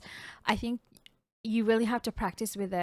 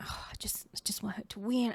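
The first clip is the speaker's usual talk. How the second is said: whispered, soft, breathy, barely voiced; 7 dB quieter than usual. Retelling a partner whispering behind them during a tense match: imitating someone whispering.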